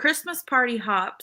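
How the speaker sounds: ordinary talk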